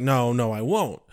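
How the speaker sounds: ordinary delivery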